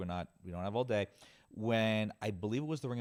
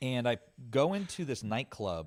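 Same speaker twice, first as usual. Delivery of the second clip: ordinary talk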